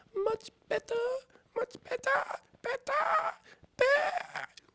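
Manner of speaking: very high, very loud squeal rising into bleat. Reading a story, the Queen replying to Alice, voice rising into a squeak. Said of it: "her voice rising into a squeak".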